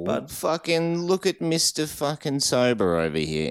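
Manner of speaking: put-on New York accent. Teasing the other speaker about having one beer, in a new york accent. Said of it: "I think we both nailed the New York".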